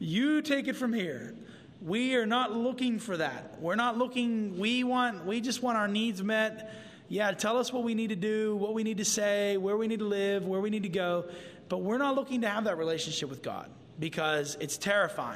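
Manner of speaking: plain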